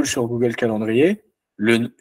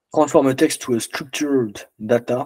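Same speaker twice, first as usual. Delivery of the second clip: put-on English accent, French speaker's pronunciation. Reading out the name of a software node, with an English accent. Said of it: "Vous noterez un accent anglais incroyable".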